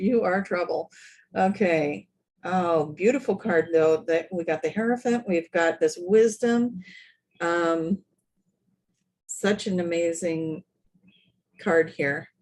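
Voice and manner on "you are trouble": speaking through laughter. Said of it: "I'm laughing 'cause this is the trouble card".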